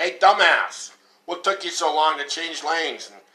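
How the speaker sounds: irritated, angry yelling. Recalling a car ride, the speaker voices their daughter at another car: imitating daughter yelling. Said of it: "my daughter starts to yell at the car".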